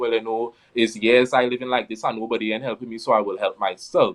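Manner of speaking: ordinary talk, nothing marked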